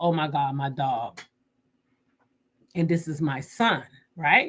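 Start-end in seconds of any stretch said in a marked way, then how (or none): 0.0-1.2 put-on tearful voice, quieter. Retelling the moment they learned their dog was lost, retelling a tearful reaction. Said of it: "I was in tears".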